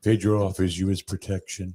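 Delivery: low, dropped character voice. Quoting a movie line to another speaker in a Napoleon Dynamite voice. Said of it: "Who talks like this?".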